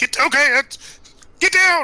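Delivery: very high-pitched, loud shout. Warning another character to get down: yelling in character. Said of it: "I yelled at Travis".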